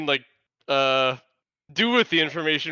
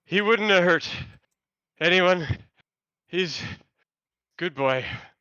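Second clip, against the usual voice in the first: out of breath, panting; 2 semitones higher than usual. Voicing a half-elf who has been running, defending his tiger: out of breath. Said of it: "he's out of breath".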